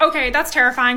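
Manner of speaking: plain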